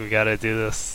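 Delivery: mock evil-sounding, sinister voice. Acting out what the centaurs might say: imitating an evil-sounding voice. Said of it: "the way you said that, that sounds evil".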